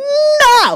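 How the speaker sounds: put-on very high, loud, drawn-out stubborn toddler voice. Retelling a toddler daughter refusing help on a climbing wall: imitating daughter's "no!". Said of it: "that's exactly how she says it".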